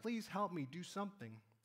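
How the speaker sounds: ordinary talk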